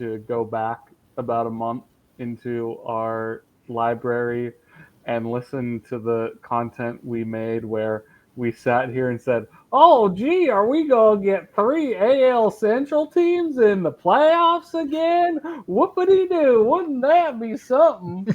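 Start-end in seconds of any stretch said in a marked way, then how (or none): 9.7-18.4 put-on Southern accent, pitched very high. Recalling what the hosts said on the podcast a month ago, put-on Southern accent. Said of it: "Why are why are we all Southern now?".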